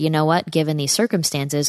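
plain

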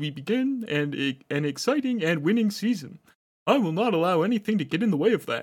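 shifting into frog-puppet voice. Voicing another man's statement for listeners, turning into Kermit the Frog by the end. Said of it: "It just turned into like Kermit the Frog by the end".

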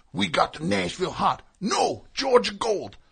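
loud, high bickering between two voices. Imitating an actor playing Colonel Sanders, arguing with himself: Colonel Sanders impression. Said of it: "He's like".

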